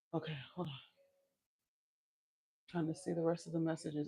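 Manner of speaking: panting, breathless. Livestreamer walking while reading viewer messages, out of breath. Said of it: "I'm I'm getting out of breath".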